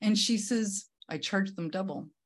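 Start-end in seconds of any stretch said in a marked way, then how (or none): 1.1-2.1 put-on deadpan delivery, quieter. Retelling the ex-mother-in-law's answer about difficult customers: imitating deadpan delivery. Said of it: "with a very straight face".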